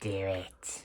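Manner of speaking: villainous cackling voice. Retelling how the Goblin taunts Peter: cackling like Goblin. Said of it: "Goblin's sitting there cackling at him like".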